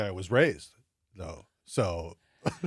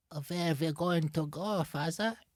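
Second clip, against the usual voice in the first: put-on child's German accent, much higher pitch; 7 semitones higher, 6 dB quieter than usual. Urging Papa to try it, speaker plays a kid with German accent. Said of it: "Do a kid doing German".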